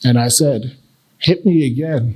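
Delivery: ordinary talk, nothing marked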